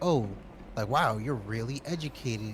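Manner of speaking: mock, openly astonished and amazed tone. Retelling an interviewer's reaction to her being educated: imitating a surprised interviewer. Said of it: "in this surprised voice".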